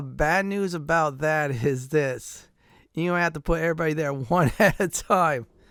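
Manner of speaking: talking through laughter. Walking listeners through how to get into the vault, laughing while talking. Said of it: "I'm laughing".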